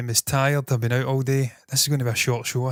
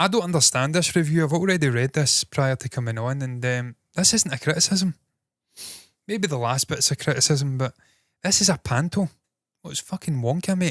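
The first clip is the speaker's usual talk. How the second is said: normal talking voice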